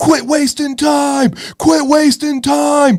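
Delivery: very high, shrill screaming. Retelling how an angry dad at a kids' soccer game acted: imitating someone screaming. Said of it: "starts screaming".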